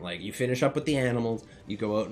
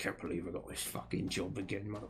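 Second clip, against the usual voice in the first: very hushed, quiet under-the-breath muttering; 3 semitones lower, 12 dB quieter than usual. Game master voices a man digging a pit alone, muttering to himself. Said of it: "You hear him muttering".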